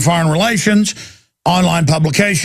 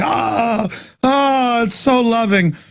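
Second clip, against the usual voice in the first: very slow, heavy, pitched-up sarcasm; 5 semitones higher than usual. Commenting on news of bombings and killings: sarcastic. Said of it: "I'm here being sarcastic how sick this is".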